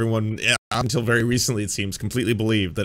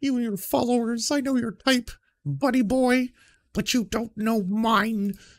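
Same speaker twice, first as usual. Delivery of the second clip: put-on very high, abusive drunk man voice; 13 semitones higher than usual. You mock how he talks by repeating his words, Jordan Peterson as 1950s abusive drunk dad. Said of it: "He still talks like a 1950s abusive drunk dad".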